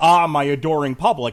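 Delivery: loud, smug, obnoxious grandstanding wrestling villain voice. Predicting how a wrestler will act on friday: imitating an obnoxious heel. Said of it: "act like an obnoxious asshole".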